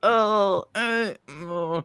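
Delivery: high, dismayed tone. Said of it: "I'm like".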